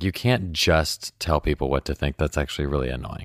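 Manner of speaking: normal talking voice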